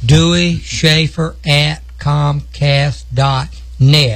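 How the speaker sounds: spelled out slowly and deliberately. Repeating the show's email address for listeners, said slowly. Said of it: "I'm going to say it slow".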